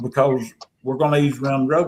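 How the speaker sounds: ordinary talk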